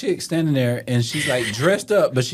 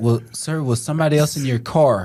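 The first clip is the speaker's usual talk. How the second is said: plain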